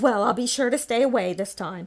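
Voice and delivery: pointed, fed-up, sarcastic delivery. Retelling what a mother said to the speaker: imitating her sarcastic tone. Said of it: "she was just being sarcastic".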